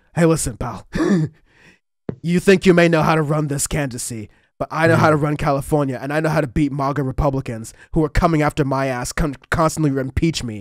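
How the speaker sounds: rough, gravelly, brash tough-guy voice. Imitating a politician brushing off critics: imitating Gavin Newsom's gravelly voice. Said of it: "in his, like, sort of gravelly voice".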